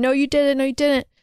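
screaming, hollered, insistent, repeated yell. Retelling how a man screamed back at a sobbing woman: imitating someone screaming. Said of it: "sobbing, like".

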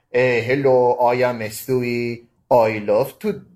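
very slow, plodding, drawn-out cartoon voice. Showing what stewie would sound like if dad did it: imitating dad voicing stewie. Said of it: "'Cause if my dad does it, this is what's gonna sound like".

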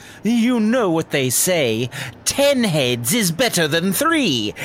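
snickering villain voice, loud and projected. Narrating a scene, a hidden voice calls out from behind a curtain, snickering Rat King voice. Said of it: "a voice from behind that curtain snickers and calls out".

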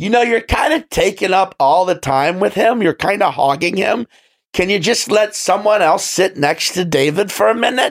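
loud, high-pitched, brash, pushy, carrying mock tone. Retelling what a woman in a bar said: imitating a loud woman. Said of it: "but she's so fucking loud".

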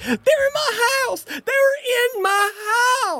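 shrill, very high screaming shriek. Game master voicing Debbie Handbag, held and consoled by a woman, screaming. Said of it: "who's screaming like".

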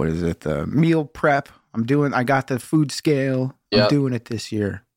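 plain

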